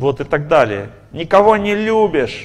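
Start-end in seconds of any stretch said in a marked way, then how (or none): 1.1-2.5 furious, high-pitched, angry yelling. Speaker acts out an enraged wife at her husband, acting out a wife's shouting. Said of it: "кричит на него".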